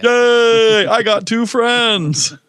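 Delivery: squeaky high voice, first word stretched. Retelling a Crank Yankers prank call: Special Ed voice. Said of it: "What's special ed from?".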